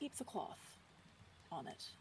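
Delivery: hushed, very soft near-whisper. Playing Sonya, asking a favor while falling into step beside Xander, speaking very softly. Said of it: "Just very softly".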